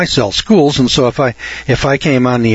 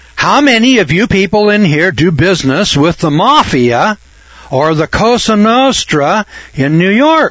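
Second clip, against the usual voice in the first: acted raised voice, slow, pitched up, every word deliberate; 5 semitones higher than usual. Retelling how the speaker addressed people who looked at him like he was stupid, raised voice. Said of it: "and then I raised my voice".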